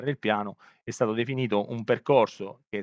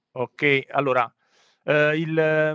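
louder, raised speaking voice. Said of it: "se riesci ad alzare un po' il tono della voce".

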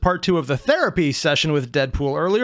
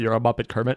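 mock deadpan, flat, fed-up, much lower; 5 semitones lower than usual. Recounting a parody where a performer breaks character; mimicking a deadpan, done-with-it line. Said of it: "in such a deadpan, done with that voice".

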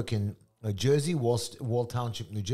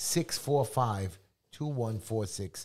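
very slow, deliberate, spaced-out digits; 2 semitones lower than usual. Giving a phone number to radio listeners, saying the number very slowly. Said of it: "I'm saying the number slow".

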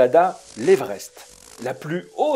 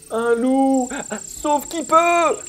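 very high, panicked, terrified scream; 10 semitones higher than usual. Narrator reading a story, voicing terrified animals: screaming in terror. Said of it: "hurlèrent les animaux terrorisés".

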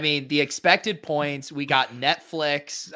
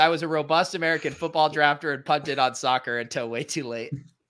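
normal talking voice

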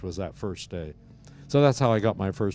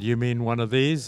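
ordinary talk

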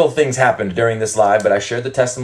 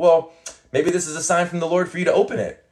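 mock sweet, loving tone, slightly higher pitch; 7 semitones higher, 3 dB quieter than usual. Retelling offering a woman a bible, re-enacting her own loving, smiling delivery. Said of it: "I said it in love and I'm saying it with like a smile on my face".

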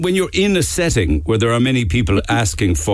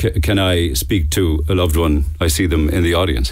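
ordinary delivery

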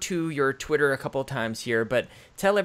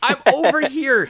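mock screaming, higher and louder; 13 semitones higher, 9 dB louder than usual. Imitating the other speaker screaming back at podcasts: imitating someone screaming. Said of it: "you're sitting there screaming, like".

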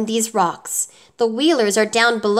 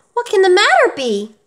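scared, alarmed, frightened, high-pitched voice; 9 semitones higher, 4 dB louder than usual. Dorothy reacts as the copper man suddenly stops moving; frightened tone. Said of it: "said Dorothy in a frightened tone".

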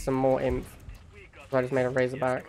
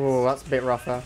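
ordinary delivery

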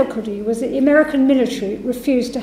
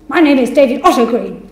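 put-on irritated, refined-sounding voice, stroppy and angry; 4 dB louder than usual. Retelling a phone call, imitating the man's reply: mock-angry David Otto Green. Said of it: "angry voice".

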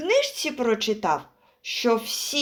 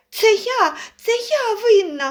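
exclaimed, much higher, louder, slower; 10 semitones higher, 5 dB louder than usual. A squirrel jumps down to the gathered hare family, exclaimed. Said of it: "вигукнула вона".

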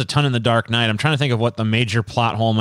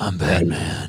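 put-on whispery voice, much lower; 6 semitones lower than usual. Discussing how the actor played him in this film, whispery Batman voice. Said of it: "he was more whispery".

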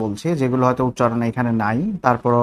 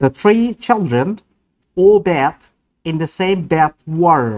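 American English accent with pitch raised; 5 semitones higher, 3 dB louder than usual. Demonstrating one sentence in different accents, imitated American accent. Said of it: "এবার আসি আমেরিকান অ্যাকসেন্ট।".

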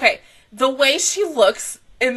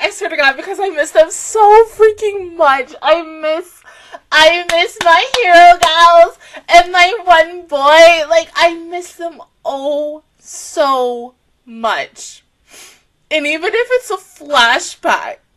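high, loud, tearful talking, crying through the words; 4 semitones higher, 6 dB louder than usual. Speaker says how much they miss their hero gals, crying while talking. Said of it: "I don't even know why I'm crying".

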